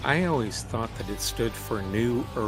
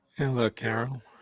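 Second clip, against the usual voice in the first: crackly, cracking voice. Greeting another speaker at the start, crackly voice. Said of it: "do you have an E-trim in your throat?".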